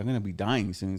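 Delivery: ordinary delivery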